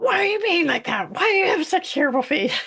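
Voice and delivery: very high-pitched, furious, angry screaming. Acting out a scenario where Jesus screams at the disciples, mock screaming at them. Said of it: "Jesus was screaming at the disciples".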